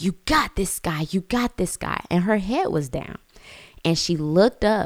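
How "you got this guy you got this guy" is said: light, eager, cheering shout. Retelling cheering their child on at the track, retelling own shouting. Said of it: "I just start shouting".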